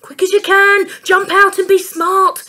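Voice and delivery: loud, high, breathless, out-of-breath panting. Dad hurries the children out of the car at the station, panting. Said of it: "panted Dad".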